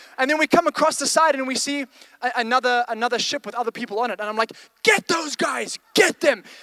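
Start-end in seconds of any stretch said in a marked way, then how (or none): 4.9-6.4 mock fierce, pitched-up battle-mode voice. Retelling a water ride battle: imitating own battle-mode shouting. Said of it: "this is full on battle mode".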